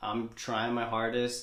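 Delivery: ordinary talk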